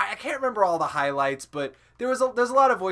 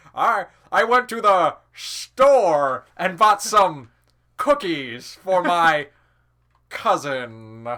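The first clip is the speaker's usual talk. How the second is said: slow, heavily emphasized old-time cartoon drunk voice; 5 dB louder than usual. Describing one of his famous characters, the speaker acts out the line: old cartoon drunk voice. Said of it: "like an old cartoon drunk".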